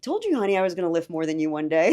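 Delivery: super chill, relaxed, laid-back, easygoing tone. Retelling what the speaker once told him while struggling, in a chill voice. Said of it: "just super like in a chill voice".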